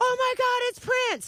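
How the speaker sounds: screamed out in a very high-pitched voice. Retelling spotting a crocodile beside the boat: retelling a scream. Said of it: "the minute I screamed".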